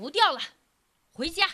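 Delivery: coarse, rough-edged, gruff voice. Reading a fable aloud, the wolf speaks to the fox after fishing, in a gruff voice. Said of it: "狼粗声粗气地说".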